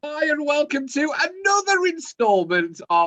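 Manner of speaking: excited, really high-pitched, swooping voice. Opening another podcast installment, greeting listeners: high-pitched excited voice. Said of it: "my voice went really high pitched there".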